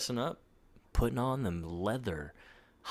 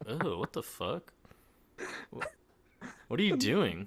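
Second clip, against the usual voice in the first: revolted, incredulous, disgusted, appalled outburst. Acting out a character's reaction to Lois, imitating a disgusted reaction. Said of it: "He looks at Lois with pure disgust".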